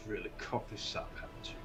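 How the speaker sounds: hushed, quick whispered elf growl under the breath. Narrating a fantasy scene, the speaker voices the elf in a growling elf voice. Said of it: "As the elf growls".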